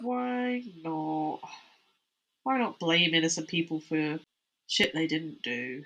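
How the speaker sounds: dejected, despondent tone. Discussing medieval scapegoating of innocent people, in a despondent voice:. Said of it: "my voice is getting so despondent".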